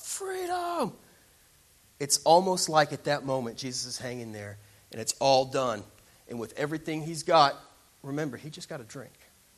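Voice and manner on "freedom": very high, high-pitched battle-cry scream. Recalling the end scene of the movie Braveheart: Braveheart freedom scream. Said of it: "And he screams out".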